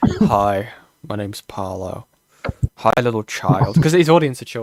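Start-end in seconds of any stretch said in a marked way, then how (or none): 0.0-3.8 very slow, drawn-out, terrifying delivery. Imagining Paolo coming up to the doorstep: terrifying Paolo impression. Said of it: "He's just, just like".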